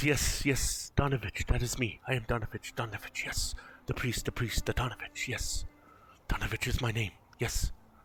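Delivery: feeble, weak, hoarse, rasping, rambling repetitive voice. Narrating a scene, voicing the priest Donovich answering a call, in a weak, hoarse voice. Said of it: "in a very weak, hoarse voice".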